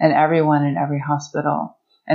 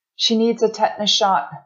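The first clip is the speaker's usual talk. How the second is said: pitched-up, called-out shout; 7 semitones higher than usual. The narrator calls after Melissa as she is wheeled toward the emergency room, shouting. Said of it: "I shouted".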